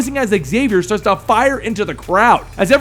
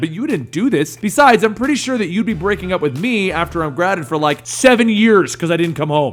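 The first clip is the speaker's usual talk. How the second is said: ordinary delivery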